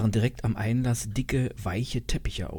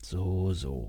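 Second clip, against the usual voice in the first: bored, uninterested mutter; 3 semitones lower, 4 dB quieter than usual. A man reacts to another man's remark with a bored murmur. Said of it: "murmelte von Hofstetter gelangweilt".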